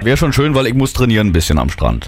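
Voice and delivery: low, gruff, manly put-on woman's voice.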